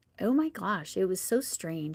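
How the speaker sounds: put-on swooping, gushing valley girl voice. Quoting friends who came to observe the speaker's classroom, in a Valley girl voice. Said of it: "I'm talking like a Valley girl there".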